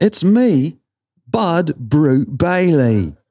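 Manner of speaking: attempted British accent. Urged to try a British accent one more time, British accent like Gordon Ramsay. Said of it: "Now I sound like Gordon Ramsay".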